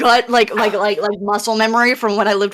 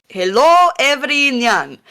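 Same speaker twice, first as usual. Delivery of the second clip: put-on elderly male voice; 3 semitones higher than usual.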